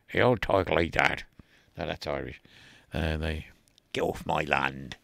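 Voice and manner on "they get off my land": put-on Cornish accent. Speaker talking about Poldark and Cornwall tries a line; put-on Cornish accent. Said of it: "Great Cornish accent".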